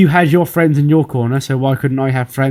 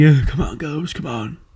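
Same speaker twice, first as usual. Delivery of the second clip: small, raspy, cheering, encouraging voice. Retelling how a wrestler cheered on two others from ringside: Fandango's raspy little voice. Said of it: "in his raspy little voice".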